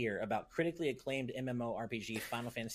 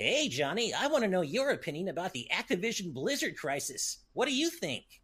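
high, pitched-up cartoon hedgehog character voice; 7 semitones higher, 4 dB louder than usual. Reading out a five-dollar donor's message aloud, doing Sonic voice. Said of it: "I apparently have to read this in Sonic's voice".

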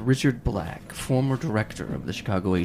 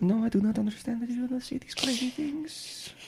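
high-pitched mock French accent. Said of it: "I like the French accent".

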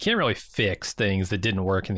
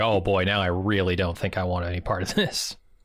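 plain

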